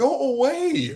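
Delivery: put-on very high-pitched little kid voice. Speaker mocking a boy heard in an adult game server: imitating a young boy. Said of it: "a boy that sounds like this".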